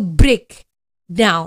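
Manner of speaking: weight on break, down lighter in break down. Teaching how to pronounce break down, stress on break in break down. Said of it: "memberikan sebuah uh, penekanan pada suku kata pertamanya".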